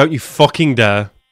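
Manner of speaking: angry voice. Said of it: "I'm so angry right now".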